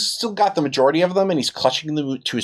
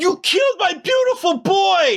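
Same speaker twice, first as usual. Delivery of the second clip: very high-pitched, shrill screaming yell. Narrator voicing an arsonist yelling at the players, yelling. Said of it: "the arsonist said yells".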